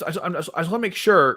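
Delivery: stuttering. Speaker trying to translate and make sure of something, stuttering. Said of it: "I'm like stuttering here".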